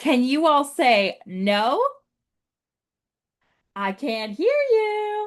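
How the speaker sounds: slow, high, swooping sing-song coaxing voice. Speaker asking the audience to say no together, like Dora the Explorer. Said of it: "I'm going to be like Dora right now".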